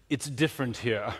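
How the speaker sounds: put-on, high-pitched Oxbridge accent. Quoting a man who took you aside and paused before answering, in a high Oxbridge accent. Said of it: "in his high Oxbridge accent".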